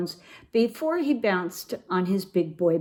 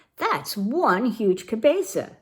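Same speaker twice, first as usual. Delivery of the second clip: usual speaking voice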